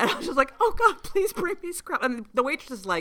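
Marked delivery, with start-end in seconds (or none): 0.6-2.1 very high, emotional, teary, pleading tone. Recalling seeing Scrapple on a menu, retelling a teary plea. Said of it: "I got teary-eyed".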